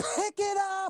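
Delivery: high, drawn-out yell. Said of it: "And I'm yelling".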